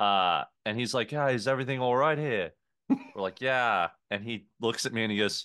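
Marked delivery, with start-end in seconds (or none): 1.1-2.5 seemingly put-on, fake Australian accent. Retelling what a man said on coming over to their table, fake Australian accent. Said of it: "this just seemingly fake Australian accent".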